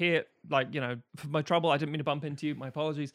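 ordinary delivery

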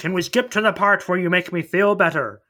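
put-on failed high Scottish accent. Quoting Shrek's line from the movie in a failed Scottish accent. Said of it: "that was not a Scottish accent".

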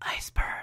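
soft, breathless, hushed whisper.

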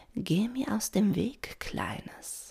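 slow, breathy, menacing, breathed-out voice. An old river dolphin tells a little one in her path to move: breathy, menacing. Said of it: "hauchte Dona Rosa bedrohlich".

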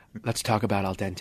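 soft public-radio announcer voice. Speaker pauses the conversation to start a new topic, in an NPR voice. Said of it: "I'm gonna use my NPR voice".

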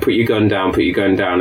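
ordinary talk

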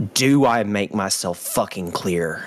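menacing, intimidating, threatening tone. A tabletop player, in character, confronts Vieris during an intimidation roll, intimidating. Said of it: "I'm going to be like".

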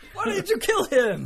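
high, loud mock yell through laughter.

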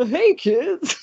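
squeaky, high-pitched voice. Showing how remembered information would come back in Barney's voice: Barney the Dinosaur voice. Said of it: "Barney the Dinosaur's voice".

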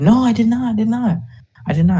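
put-on faint Eastern European accent, very high pitch. Retelling what a woman said, in a light eastern european accent. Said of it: "in a kind of not thick accent".

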